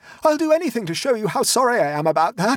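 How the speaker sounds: very high-pitched, desperate, pleading cry. Reading a story, a character floundering in the muck calls to the others; crying out. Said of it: "cried Octavian".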